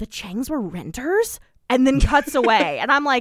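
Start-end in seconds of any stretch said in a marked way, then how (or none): 0.0-1.4 mock muttering under the breath. Recapping a TV scene where a woman leans over to another, imitating her muttering. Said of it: "kind of under her breath leans over to Ivy".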